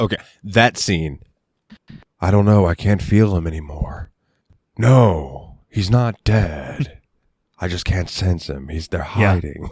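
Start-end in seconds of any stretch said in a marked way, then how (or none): 2.2-9.7 flat level tone throughout, "no" drawn out. Acting out a movie scene while discussing it with another speaker: Nicolas Cage impersonation. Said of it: "I love your Cage impersonation".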